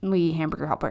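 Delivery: words slurred together, quiet, indistinct, under the breath. Retelling what a recent client said: imitating a mumble. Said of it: "kind of mumbled like that".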